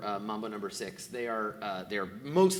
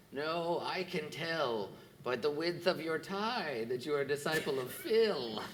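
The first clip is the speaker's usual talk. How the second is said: put-on high, contemptuous, sneering old woman voice; 5 semitones higher, 4 dB quieter than usual. Voicing an old woman who rejects a player's claim: sneering old woman. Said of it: "she sneers at you and she says".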